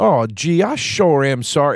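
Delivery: razzing, slow, mocking fake politeness. Retelling how a building super razzes a racist man: mocking fake-polite voice. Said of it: "and he's doing this voice".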